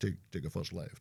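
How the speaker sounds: soft satnav-style voice. Imagining Sean Connery as the voice of a sat nav, do a Sean Connery sat nav voice. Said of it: "you could get his voice".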